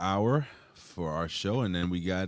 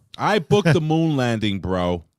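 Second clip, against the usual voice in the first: high, loud, booming, belted-out voice; 5 semitones higher, 11 dB louder than usual. Doing a Vince Russo impression as a wrestling booker: Vince Russo impression. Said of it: "I'm doing my Vince Russo".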